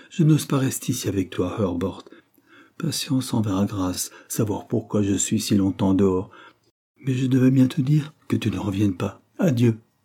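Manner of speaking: plain reading voice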